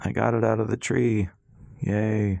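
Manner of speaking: flat, slow, deadpan monotone with dry cheer. After a painful fall, a man answers a woman checking on him, flat. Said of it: "Rass said flatly".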